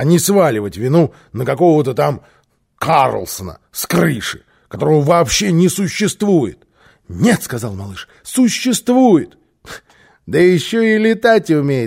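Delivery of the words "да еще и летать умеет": scoffing, teasing, mocking tone. Reading a story aloud, voicing Bosse answering the little boy, mocking. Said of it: "насмешливо подхватил босса".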